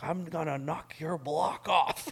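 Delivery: mock angry shout, high and furious. Retelling how a man yelled as the speaker walked out, imitating a yell. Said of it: "And he's yelling at me".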